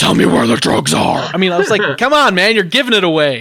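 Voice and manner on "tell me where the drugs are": low, rough, deep gravelly growl. Mocking a man who sounded like Batman: Batman voice. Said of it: "why does he sound like he's Batman?".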